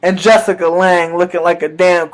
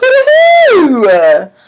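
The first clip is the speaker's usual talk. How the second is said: high, slow, stretched-out hyped cry. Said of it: "I was hyped".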